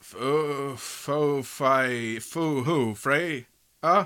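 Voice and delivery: put-on drunken slurred speech. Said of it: "You're drunk, Odin".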